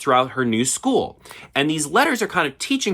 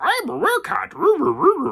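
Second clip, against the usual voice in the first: put-on badly done old sage voice, very high and creaky; 12 semitones higher than usual. Retelling a werecat's line, in a bad Yoda impression. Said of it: "that was such a bad Yoda impression".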